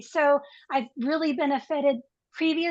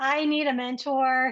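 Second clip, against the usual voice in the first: normal talking voice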